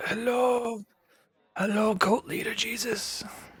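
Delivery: croaky voice, very high pitched. Showing how the Baron speaks while describing a scene, Baron Greenback voice. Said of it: "a bit more uh, of a croaky voice. He's like".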